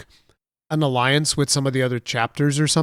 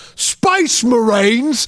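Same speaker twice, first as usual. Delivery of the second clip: put-on orc voice with Cockney accent; 9 semitones higher, 5 dB louder than usual. Recalling an orc's line from a video game, Cockney orc voice. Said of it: "The fucking Cockney accent on orcs".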